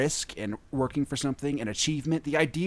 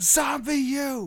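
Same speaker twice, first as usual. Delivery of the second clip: mock scream, higher pitch; 12 semitones higher than usual. Retelling screaming at a game while others were in the house: retelling own scream. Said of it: "and I'm screaming".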